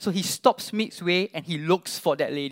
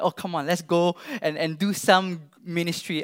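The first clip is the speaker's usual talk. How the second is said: normal talking voice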